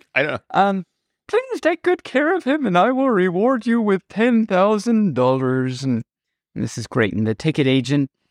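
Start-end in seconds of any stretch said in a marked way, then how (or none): 1.3-5.9 put-on fussy, high-pitched elderly woman voice. Joke teller voicing the old lady asking the ticket agent to care for her dog, old lady voice. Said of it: "Why does she talk like this?".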